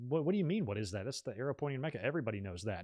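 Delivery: matter-of-fact, as if everyone already knows. Retelling how Brody explained the arrow: imitating someone stating the obvious. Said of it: "he said it as if it was like".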